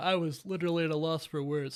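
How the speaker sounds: talking through a yawn. Podcast host wrapping up an episode review for listeners, talking while yawning. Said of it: "Sorry, I'm yawning".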